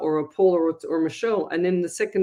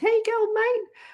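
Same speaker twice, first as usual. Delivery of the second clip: cartoonish talking bird voice. Speaker imitates their pet bird saying words it was taught: Smurf-like talking bird voice. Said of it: "he talks like a Smurf and he goes".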